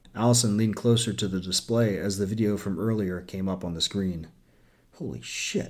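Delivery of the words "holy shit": breathy, hushed whisper out on the breath. Narrator voicing a woman watching a ship's recording on the display, breathed. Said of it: "she breathed".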